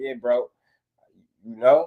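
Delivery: ordinary talk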